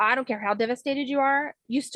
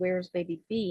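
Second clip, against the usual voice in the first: quiet half-whispered voice; 2 semitones lower, 5 dB quieter than usual. Retelling asking the ultrasound tech a question: retelling own half-whisper. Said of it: "I whispered to her".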